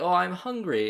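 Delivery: kooky put-on British accent. Describing a show's little brother character talking to the witch: kooky british accent. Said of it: "like kooky British accent".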